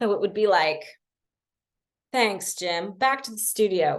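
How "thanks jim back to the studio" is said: newsreader delivery with anchor-style broadcast tune. Imitating speakers whose intonation sounds like a news report: newscaster-style intonation. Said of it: "Like the intonation tends to be a bit more newscastery. Did you like my news report?".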